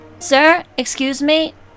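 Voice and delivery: speaking up. Getting the attention of an older man who may be hard of hearing, speaking a bit louder. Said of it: "clear myself and speak a bit louder".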